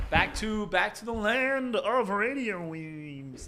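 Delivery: very slow, high, stretched-out cartoon voice. A host leads the program back on air, Marvin the Martian impression. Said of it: "That was a Marvin the Martian".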